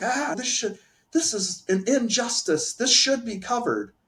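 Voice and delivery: high-pitched complaining. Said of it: "I was complaining about it".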